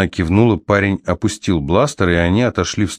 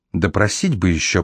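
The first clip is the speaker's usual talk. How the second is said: ordinary delivery, nothing marked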